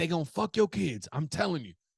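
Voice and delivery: a man yelling lightly, high-pitched. Retelling a subway rider's rant: imitating a man yelling. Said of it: "he starts yelling".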